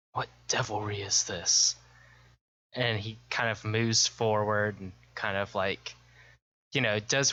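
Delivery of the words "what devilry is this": spoken aside to oneself. Voicing a character as a skeletal horse stands up: half-whispering to himself. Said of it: "whispers to his-, himself".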